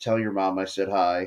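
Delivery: plain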